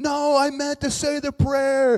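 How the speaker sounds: shrill, very high, loud desperate screaming. Retelling a scene where demons drag a kid away, imitating someone screaming. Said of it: "and he's screaming".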